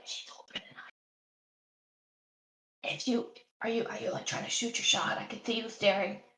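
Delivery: whispered character voice. Whispering in character to a companion at the table: whispering in character. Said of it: "I'm kinda gonna whisper".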